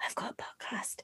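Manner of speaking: hushed whisper with almost no voice. Retelling how they first told people about the podcast: imitating own whisper. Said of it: "whispering, like".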